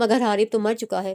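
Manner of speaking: plain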